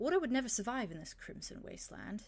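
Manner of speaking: rough, gruff, guarded and wary voice. Narrating a game scene, the hooded being answers after hesitating: gruff, wary voice. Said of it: "in a gruff, wary voice".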